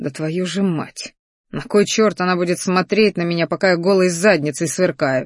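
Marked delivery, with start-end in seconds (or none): none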